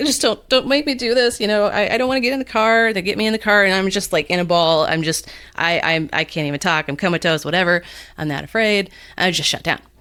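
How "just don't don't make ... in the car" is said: mock tearful crying, pitched up and stammering. Acting out being cornered and forced into a car: acting out a crying plea.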